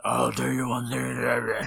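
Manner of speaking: low, rough, slow, unintelligible growling drawl. Complaining that you can't understand him in The Dark Knight, do a hard-to-understand Batman voice. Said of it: "I can't understand him".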